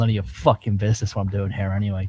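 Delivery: half-swallowed, muttered under the breath, barely audible. While the other character looks around for something, mumbling under the breath. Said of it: "I mumble under my breath".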